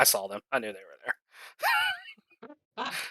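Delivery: low, soft mutter under the breath, as an aside. The speaker says what they'll say just loud enough for people around them, muttering under breath. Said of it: "Under my breath".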